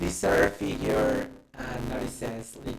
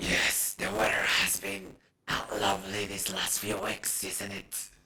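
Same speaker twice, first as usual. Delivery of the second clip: low, rasping, menacing, deadly voice; 5 semitones lower than usual. Voicing a tall hooded figure talking politely with a woman, raspy, deadly voice. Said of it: "with its raspy, deadly voice".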